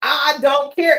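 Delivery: firm, dismissive, stated with total authority. Retelling how people say they don't care: imitating someone saying it with authority. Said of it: "and say it with authority".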